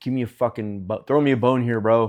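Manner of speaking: acted frustrated outburst. Recounting a frustrating moment, the speaker replays a frustrated outburst. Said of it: "And I got super frustrated".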